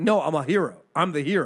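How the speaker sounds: plain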